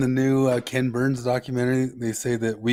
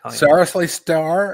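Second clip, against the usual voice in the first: put-on Californian voice, higher and louder; 5 semitones higher, 6 dB louder than usual. Comparing the other speaker's voice to a sketch: The Californians sketch voice. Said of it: "the Californians a little bit when they do that Californian sketch".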